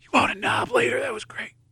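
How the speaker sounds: soft, breathy whisper, very close. Imagining the wife jumping into his arms, the speaker imitates her whisper. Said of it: "she's gonna whisper like".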